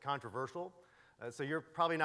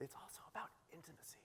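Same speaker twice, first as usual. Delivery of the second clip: very soft, hushed, barely voiced whisper; 4 semitones higher, 17 dB quieter than usual. A speaker talking about online teaching drops to a whisper.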